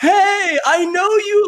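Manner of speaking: put-on, drawn-out, shrill shout, very high, super loud. Retelling how the listener came up at a co-working space, imitating someone yelling super loud. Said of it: "Like super loud".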